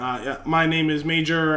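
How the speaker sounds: ordinary delivery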